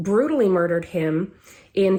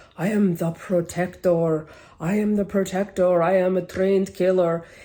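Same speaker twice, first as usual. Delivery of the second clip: put-on hammy, cheesy, exaggerated Russian accent. Quoting a woman who claimed an alternate personality, in a cheesy Russian accent. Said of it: "she put on this really cheesy Russian accent. It was like".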